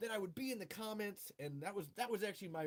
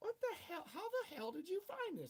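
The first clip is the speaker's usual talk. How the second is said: squeaky, very high, little nerdy guy voice; 10 semitones higher than usual. Retelling how someone reacted to seeing the book: Steve impression. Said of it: "I'm doing my Steve impression".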